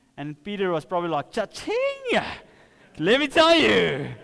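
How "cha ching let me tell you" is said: high, swooping evangelist preacher voice with big sing-song swoops. Retelling a Bible story, the speaker voices Peter's reply in an evangelistic voice as Peter. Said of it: "In a very evangelistic voice".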